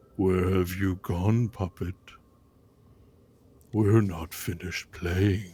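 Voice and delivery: deep, low, sinister and menacing voice. Narrating a scene, voicing a presence calling to a nervous character: loud low voice. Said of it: "you hear a loud, low voice".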